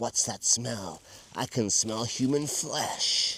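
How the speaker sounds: slow, creepy spider-monster voice. Retelling a made-up game with a nephew, playing the spider: creepy dancing spider voice. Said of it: "I'm the creepy dancing spider on the floor".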